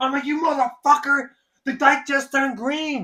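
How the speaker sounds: acted, very high furious blurt. Retelling his reaction to a driver honking at a green light, retelling an angry outburst. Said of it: "you know what pisses me off the most".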